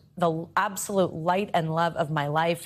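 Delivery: ordinary talk, nothing marked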